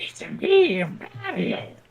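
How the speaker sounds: very high-pitched heroic voice, pushed way up. Joking about people who can do voice impressions, in a Mario voice. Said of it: "Like Mario and Gollum".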